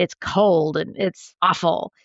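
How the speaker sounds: sulky, grumpy grumbling, dragged out slowly. Speaker retelling what a patient said about breakfast, imitating a grumpy patient. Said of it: "kinda got a little grumpy with me and said".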